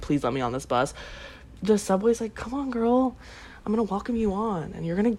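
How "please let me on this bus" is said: acted tearful, sobbing begging. Retelling begging a bus driver to be let on, acting out sobbing. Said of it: "i'm like sobbing on my knees like".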